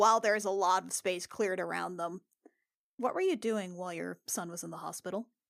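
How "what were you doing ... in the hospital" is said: voice dropped low and hushed. Voicing a character questioning someone privately: lowered voice. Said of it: "lower her voice".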